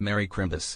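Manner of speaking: deadpan, matter-of-fact. He delivers his greeting to the group, flat and matter-of-fact. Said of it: "Just so matter of fact".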